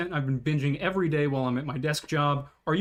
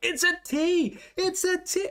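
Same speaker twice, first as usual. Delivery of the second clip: screaming, pitched higher. Retelling shouting at the computer during a game: imitating own screaming. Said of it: "I'm screaming at my computer".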